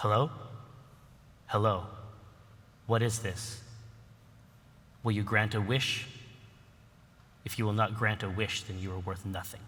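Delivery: deep, dark voice. Describing what the device plays, acting out the voice in a darker, deeper voice. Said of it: "a darker voice, a deeper voice say".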